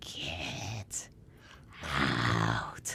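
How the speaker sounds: ghostly breathy whisper, "out" drawn out. Retelling what a ghost said in the house: imitating a ghost's scary "get out". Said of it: "just the way he said it to me that I freaked out".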